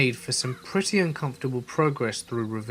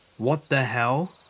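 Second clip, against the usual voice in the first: usual speaking voice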